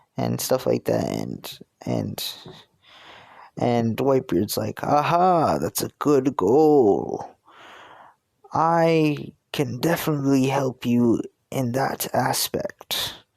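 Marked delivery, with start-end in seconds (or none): 4.9-13.2 put-on slow speech with a slight British accent. Imagining Whitebeard answering someone's goal, in a slight British accent. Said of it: "giving him a slight, slight like British accent".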